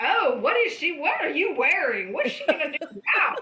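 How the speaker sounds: put-on very loud, high child voice, heckling shout. Retelling a boy heckling the actors at a play: imitating a kid yelling. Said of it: "And he's yelling".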